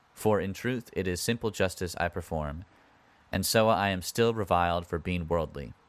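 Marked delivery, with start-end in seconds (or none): none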